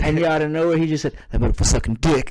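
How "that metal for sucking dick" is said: mock low voice, lower. Retelling a friend's punchline at a party: imitating a lowered voice. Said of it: "the way he lowered his voice".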